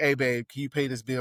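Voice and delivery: ordinary talk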